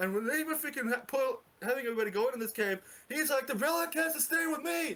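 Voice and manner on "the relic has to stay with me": put-on high, insistent screaming. Retelling a character's line during an alien attack: imitating someone screaming. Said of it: "he's literally screaming this".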